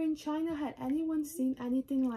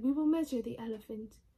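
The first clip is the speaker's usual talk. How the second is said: plain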